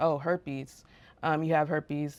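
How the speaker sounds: ordinary talk, nothing marked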